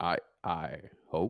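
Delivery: put-on deep narrator voice. Finishing a Morgan Freeman impression: Morgan Freeman impression. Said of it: "Finish your impression".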